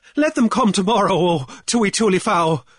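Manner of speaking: high-pitched, imploring, pleading voice. Amid a run on the bank, a man turns to the king, appealing. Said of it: "Cornelius appealed to the king".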